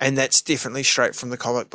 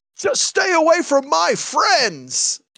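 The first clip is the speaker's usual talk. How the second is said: put-on very high, very slow swooping yell; 3 dB louder than usual. Retelling how a hero shouts at a villain in a fight: imitating Cyclops shouting. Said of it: "so you could hear Cyclops shout at Sinister".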